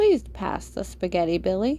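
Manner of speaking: ordinary delivery, nothing marked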